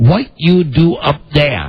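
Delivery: strong put-on Japanese accent. Retelling what the DirecTV repairman said after the roof: Young's heavy Japanese accent. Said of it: "he has the heavy accent".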